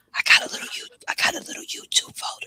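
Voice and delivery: hushed whisper. Telling the others about a secret folder, whispering a secret. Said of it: "I'm gonna whisper it to you".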